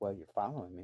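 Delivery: put-on angry woman voice. Speaker retells a woman who pulled in after them, acting out her anger. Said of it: "And she got fucking mad".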